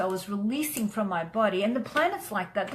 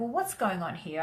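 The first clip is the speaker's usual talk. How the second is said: ordinary talk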